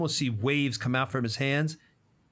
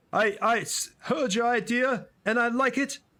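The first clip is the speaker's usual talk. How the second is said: pitched way up, squeaky fake voice; 10 semitones higher than usual. Speaker voices Hans talking to Faraday, Faraday's character voice. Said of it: "I'm doing Faraday's voice".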